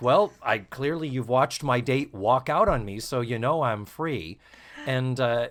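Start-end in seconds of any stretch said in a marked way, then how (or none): none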